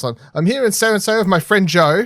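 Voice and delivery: put-on British accent. Retelling how a video creator opened his video: imitating a British accent. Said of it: "with a Br-, British accent, of course".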